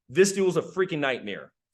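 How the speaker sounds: plain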